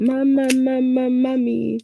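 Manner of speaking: put-on high child's screaming cry. A parent retells their daughter getting a shot at the doctor's: imitating a child screaming. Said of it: "she screamed out".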